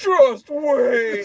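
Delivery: shrill, booming, screeching villain voice, "wait" dragged out. Comparing to a movie villain, quoting him: imitating Dorian Tyrell. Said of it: "when Dorian's like".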